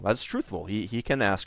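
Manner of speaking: plain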